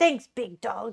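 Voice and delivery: energetic, sporty delivery. Trying out a way to say thanks, going for basketball energy. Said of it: "go for like a, a basketball energy".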